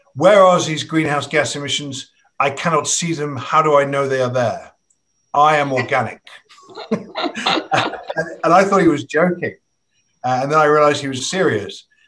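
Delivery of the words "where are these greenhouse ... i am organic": put-on strong, heavy French accent, laid on thick. Speaker quotes a man's reply in their conversation, in a strong French accent. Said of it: "in a strong French accent".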